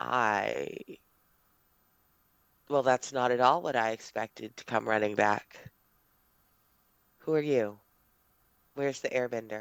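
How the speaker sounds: very rough, damaged voice. Voicing a mysterious figure in the dark: very rough, damaged voice. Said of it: "it carries a voice, very rough".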